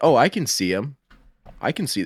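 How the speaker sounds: mocking, snide, sarcastic, swooping sing-song. Retelling own complaint about not seeing enemies: imitating a sarcastic remark. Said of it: "in a sarcastic manner".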